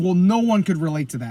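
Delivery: ordinary delivery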